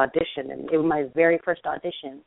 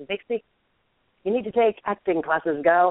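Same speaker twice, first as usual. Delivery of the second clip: put-on British accent; 4 semitones higher than usual. Quoting a late mentor's advice: imitating a mentor's british accent. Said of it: "he always called me Vixie with his British accent".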